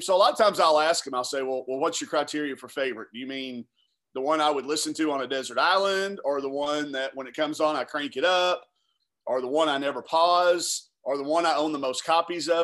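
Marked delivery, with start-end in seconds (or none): none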